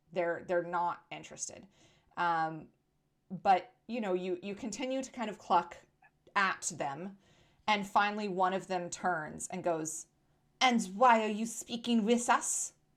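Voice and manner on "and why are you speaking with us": put-on gossipy hen voice with French accent. Voicing a gossipy chicken answering a player: French-accented gossipy chicken voice. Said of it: "they're French for sure".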